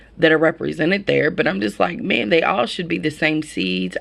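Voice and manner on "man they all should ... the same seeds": plain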